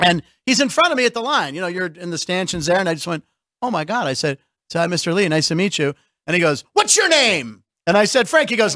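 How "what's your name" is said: mock big, high, hearty, public-sounding voice. Telling of a man in the bank line greeting him: retelling a loud greeting. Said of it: "really loudly".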